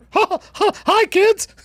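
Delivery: mock high cartoon mouse voice. Show the others the impression that drives your kids crazy, in a Mickey Mouse voice. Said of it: "I do a Mickey Mouse too".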